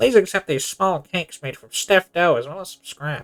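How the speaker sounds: put-on voice of a cartoon squid. Reading the study organizers' message aloud, in a Squidward voice. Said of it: "I don't know why I went for Squidward".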